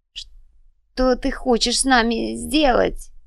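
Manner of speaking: hoarse voice. Reading bound witch Elvira's question to the sorceress, hoarsely asking. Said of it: "хрипло спросила Эльвира".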